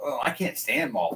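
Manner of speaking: normal talking voice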